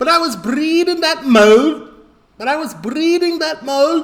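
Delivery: put-on very high-pitched Liverpool Scouse accent. Repeating a line after a TV clip: Scouse accent.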